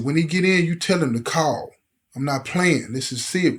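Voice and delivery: ordinary talk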